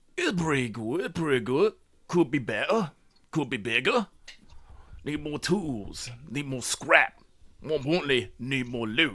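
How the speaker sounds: grunting, dismissive orc voice. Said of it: "grunts dismissively like that".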